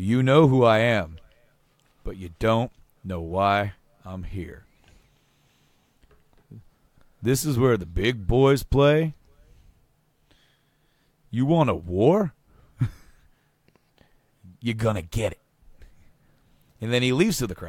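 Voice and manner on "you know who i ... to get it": put-on fully committed, full-on wrestler accent. Retelling a wrestler's surprise promo on the microphone: Razor Ramon accent. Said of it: "in full Razor accent says".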